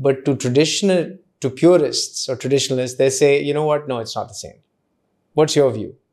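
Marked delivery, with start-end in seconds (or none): none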